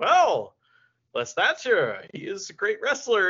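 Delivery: bright, sparkly, cheerful, delighted voice. Retelling how a wrestler talked about his good friend, imitating Nigel McGuinness, all sparkly and happy. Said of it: "his voice got all, like, sparkly and happy".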